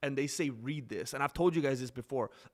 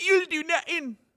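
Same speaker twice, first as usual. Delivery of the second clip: very high, very loud, shrill belted voice; 8 dB louder than usual. Doing an impression for the live chat: Conor McGregor voice. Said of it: "That's how close I get".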